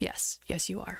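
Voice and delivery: put-on sorrowful, sad-sounding voice. Recounting a scene, the speaker acts out a man's reply, retelling a sad reply. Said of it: "you can hear how sadly he just goes".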